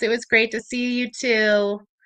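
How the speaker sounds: ordinary talk, nothing marked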